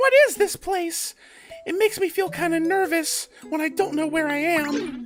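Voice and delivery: put-on baby talk, way up high. Trying out a voice to give Bonsley, Bonsley baby voice. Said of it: "what kind of kind of baby voice can I give to Bonsley?".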